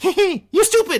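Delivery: very high, shrill, loud goblin voice. Voicing a goblin turning on the players in a game, in a goblin voice. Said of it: "And the goblin looks up".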